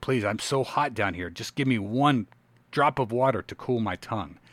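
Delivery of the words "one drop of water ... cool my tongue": ordinary talk, nothing marked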